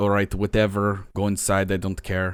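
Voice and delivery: put-on Russian accent. Describing a standoffish front desk character, in [name]'s Russian accent. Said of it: "Russian accent".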